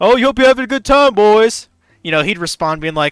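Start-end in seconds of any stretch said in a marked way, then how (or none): 0.0-1.7 shrill, booming, very high, loud squeezed-up voice. Retelling how a guidance counselor talked: Mister Mackey voice. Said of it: "talked exactly the same as Mister Mackey".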